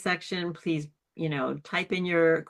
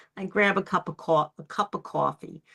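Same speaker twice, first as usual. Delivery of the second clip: casual, put-on New York accent. Showing how an accent can reveal where someone is from: new york accent. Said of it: "that person's from New York".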